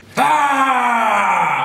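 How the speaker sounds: blood-curdling, terrified scream. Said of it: "the most blood-curdling scream".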